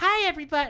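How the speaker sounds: loud, very high-pitched put-on voice. Recalling opening an early stage set, greeting the audience in a fake high voice. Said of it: "pretend to have like a high voice".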